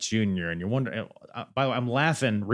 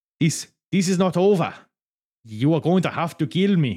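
bad Italian accent, much higher and louder; 6 semitones higher, 4 dB louder than usual. Retelling what Laura De Mateo says, in a bad Italian accent. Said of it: "This is my Italian accent".

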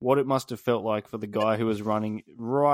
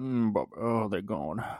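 put-on Scottish movie-star voice, quieter; 4 dB quieter than usual. Acting out the gibberish lyrics as a film line: Sean Connery voice. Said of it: "in the voice of Sean Connery".

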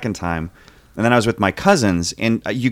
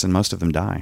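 grave, straight-faced, dead serious tone; 2 semitones lower, 5 dB quieter than usual. Summing up a movie plot against a thirty-second clock: serious tone. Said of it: "You sound so serious about it".

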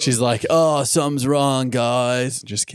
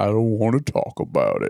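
very deep, low-pitched, sultry voice; 3 semitones lower than usual. Retelling a scene, giving Fluttershy's line: deep sultry Fluttershy voice. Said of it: "Very deep, deep voice".

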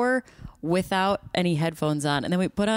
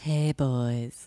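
mock sultry phone-line voice, lower pitched; 5 semitones lower than usual. Answering a joke that the speaker should do phone sex: put-on phone sex voice. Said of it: "Phone sex?".

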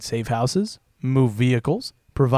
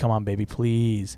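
mock pleading, begging tone; 3 semitones lower, 4 dB quieter than usual. Retelling how he begged a wife who left to return: imitating someone begging. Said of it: "forcing him to beg for her return".

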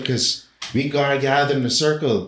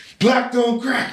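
put-on shout, higher; 10 semitones higher than usual. Retelling how a group started shouting: imitating people shouting. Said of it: "they started shouting".

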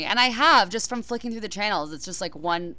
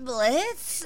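hesitant, doubtful, unconfident, higher-pitched delivery; 6 semitones higher than usual. Re-enacting how the speaker sounded earlier, imitating own unsure voice. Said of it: "that was my unconfident voice. That's what I sounded like".

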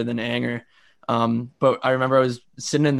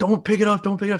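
loud, urgent high scream; 8 semitones higher than usual. Retelling how he screamed at his mom not to pick up the phone, retelling a scream.

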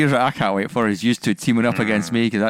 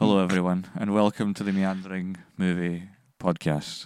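more subdued, lower and quieter; 3 semitones lower, 7 dB quieter than usual. Restarting the podcast intro after offering a calmer take: lower energy. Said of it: "would you like me to start that with lower, lower energy?".

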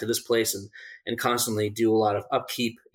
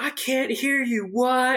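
mock yelling, high and drawn-out; 14 semitones higher than usual. Retelling a friend who kept yelling in the woods: imitating someone yelling. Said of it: "he just started yelling and yelling".

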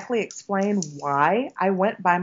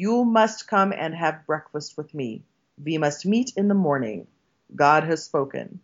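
heavy, put-on Hungarian accent, lower pitch; 2 semitones lower than usual. Retelling what a woman said to the speaker, in a strong Hungarian accent.

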